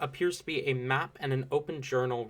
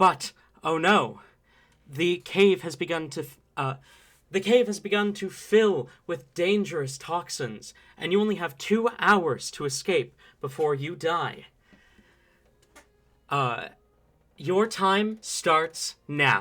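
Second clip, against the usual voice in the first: echoey voice, higher and louder; 4 semitones higher, 5 dB louder than usual. Voicing a recorded cave announcement greeting the players: echoing voice. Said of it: "a voice, uh, kind of echo".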